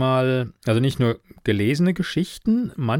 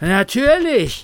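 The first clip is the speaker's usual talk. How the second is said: winded, breathless, very high-pitched voice; 11 semitones higher, 5 dB louder than usual. Narrator reads Karl's reply, a bit out of breath. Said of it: "entgegnete Karl etwas außer Atem".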